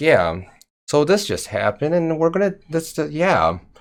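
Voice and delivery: subtle, soft, calm, unbothered, understated delivery. Imitating Jenna calming a chat where everyone goes crazy: subtle calm voice. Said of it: "just a subtle, calm voice".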